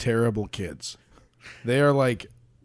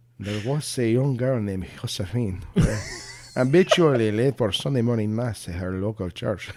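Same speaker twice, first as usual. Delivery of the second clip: put-on Spanish accent. Reading a story aloud for a joke, in a put-on Spanish accent. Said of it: "And now I wanna do it in a Spanish accent".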